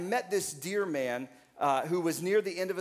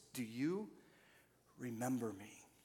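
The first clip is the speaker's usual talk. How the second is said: very soft, quiet, frail, weak, feeble voice; 4 semitones lower, 12 dB quieter than usual. Retelling a man's question after a prayer, imitating his weak, feeble voice. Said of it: "In his weak and feeble voice".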